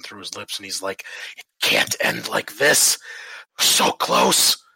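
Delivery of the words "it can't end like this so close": wounded, raised, rough, slow hiss. Game master voicing a badly hurt man steadying himself on a table, hissing through blood. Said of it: "he kind of hisses at you through the blood".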